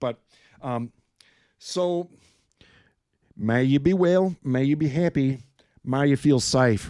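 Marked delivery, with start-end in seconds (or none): 3.4-6.9 badly done, terrible put-on Australian accent. Signing off to the audience with a wish, terrible Australian accent. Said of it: "That was a terrible Australian accent".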